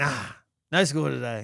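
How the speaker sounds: mock groggy, drowsy, half-asleep mumble. Retelling answering a child's question in the early morning: imitating own half-asleep voice. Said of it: "In my half awake, half asleep state".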